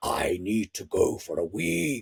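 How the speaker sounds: quiet, deep dragon voice. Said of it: "still doing this voice".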